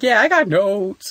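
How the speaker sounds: very high, unhurried, drawn-out delivery. Retelling her answer on a talk show: Yvette Nicole Brown impression. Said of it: "She's like".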